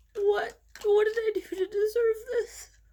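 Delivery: crying while talking. Filming a video, the speaker talks while crying. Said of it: "force myself to stop crying".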